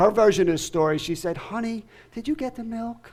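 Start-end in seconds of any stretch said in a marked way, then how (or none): 1.4-3.1 beautiful, soft, gentle, hushed voice. Retelling how his wife spoke to him, in a beautiful, soft voice. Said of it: "In a beautiful, soft voice".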